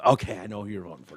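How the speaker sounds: muttered under breath. Retelling a remark made when walking past someone: imitating own muttering under breath. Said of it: "when I mutter under my breath".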